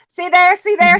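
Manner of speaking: mock, high, excited hollering call. Speaker recalls a woman on the telephone, retelling someone hollering. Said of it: "she kept hollering".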